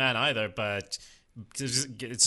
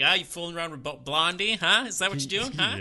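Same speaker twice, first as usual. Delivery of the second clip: put-on teasing father voice, higher pitched; 6 semitones higher than usual. Retelling how the father hides his emotion: imitating Tony Soprano teasing. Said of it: "he has to go the route of".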